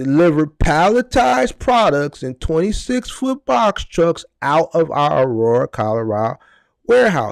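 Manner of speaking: very slow, deliberate, drawn out word by word. Addressing the guys, saying it real slow. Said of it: "I'm going to say it real slow".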